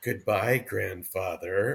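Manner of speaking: put-on eerie, soft, creepy four-year-old girl voice. Describing audiobook narrators voicing a child, the speaker does a creepy four-year-old girl voice. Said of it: "this 4-year-old girl voice, but creepy".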